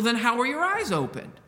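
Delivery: accusing, accusatory tone. Asking the question with a sound of accusation: accusing tone of voice. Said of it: "There's accusation in that question".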